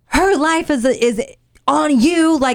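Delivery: high-pitched, angry, accusing rant.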